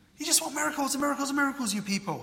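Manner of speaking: mock very high, fed-up, exasperated, rattled off fast. Explaining a scripture passage to listeners, voicing the quoted words, acting out exasperated tone. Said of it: "Can you hear an exasperated tone in Jesus' voice?".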